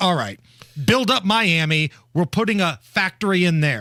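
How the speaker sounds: plain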